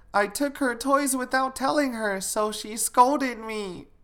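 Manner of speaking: put-on high, small little girl voice. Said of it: "She said".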